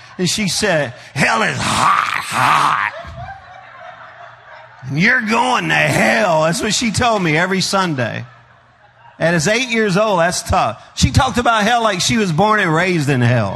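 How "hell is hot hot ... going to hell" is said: slow, heavy, mannish smoker's voice. Retelling what a sunday school teacher said: imitating teacher's smoker voice. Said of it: "she talked like a man, like a man who smoked a lot".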